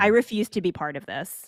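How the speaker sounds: usual speaking voice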